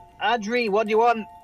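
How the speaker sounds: calling out loudly. Asking a companion standing right behind what they want, shouting. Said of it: "I don't know why you're shouting".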